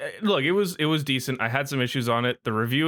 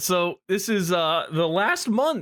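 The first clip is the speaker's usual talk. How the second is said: voice cracking up high mid-line; 5 semitones higher than usual. Talking in the kitchen about the movie Chef, the speaker's voice cracks. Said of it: "that voice crack".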